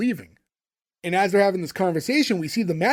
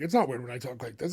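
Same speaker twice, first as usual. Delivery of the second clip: low, fast mumble in a weird voice. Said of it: "kinda just mumbling on".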